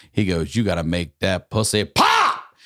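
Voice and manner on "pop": very high, loud shout on the word pop. Retelling a coworker's advice on the secret: imitating a yell on POP. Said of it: "the way he yelled "pop"".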